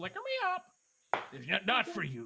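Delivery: very high, shrill, squawky parrot voice. Telling a story, the speaker voices the parrot after a man offers rum: parrot voice. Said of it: "And the parrot goes".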